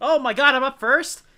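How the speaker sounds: full-volume, high, drawn-out yell. Reacting to being told they are up first, yelling. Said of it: "Why are you yelling?".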